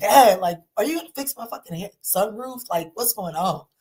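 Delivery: fed-up, frustrated tone. Retelling asking a dad to fix the sunroof: retelling own fed-up demand. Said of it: "I was just tired and I was like".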